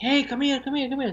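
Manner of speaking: very high, repeated, calling shout. Retelling how dad called a child over: imitating dad shouting. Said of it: "shouted to me".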